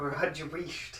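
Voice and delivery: mock Scottish accent, odd timbre.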